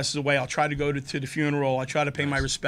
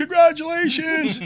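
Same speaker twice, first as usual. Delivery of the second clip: mock hollering, loud and very high-pitched; 13 semitones higher, 6 dB louder than usual. Retelling running onto a wedding dance floor toward the head table: retelling own yell. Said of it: "I'm yelling".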